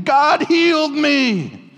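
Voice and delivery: high, slow, loud joyful scream. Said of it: "running down my street screaming".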